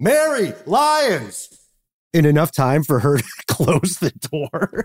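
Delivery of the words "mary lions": high, frantic yell. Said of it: "he managed to yell".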